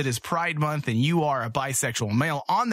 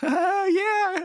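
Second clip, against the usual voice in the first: very high, put-on, fake, forced enthusiasm. Imitating a roller coaster rider pretending to have fun: imitating a scared rider faking enjoyment. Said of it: "pretending they're having a good time, but you know they're scared".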